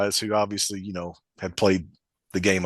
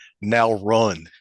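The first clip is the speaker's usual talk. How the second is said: put-on cold, flat delivery. Retelling what a player said after reviving the speaker in a game: imitating a cold delivery. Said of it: "he was so cold with it".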